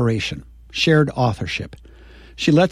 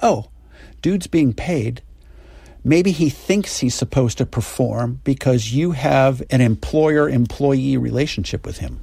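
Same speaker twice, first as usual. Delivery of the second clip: ordinary delivery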